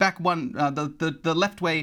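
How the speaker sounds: flustered, frantic, tripping-over-words splutter. A man frantically searching his clipboard for the roof access point, frantic spluttering. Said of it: "that is spluttering".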